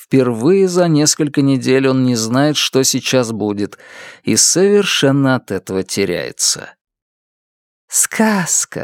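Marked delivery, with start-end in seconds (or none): 7.9-8.8 dreamy, faraway, lost-in-thought delivery. Margaret speaks from under a gray blanket to a man standing frozen, dreamy. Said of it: "мечтательно произносит Маргарет".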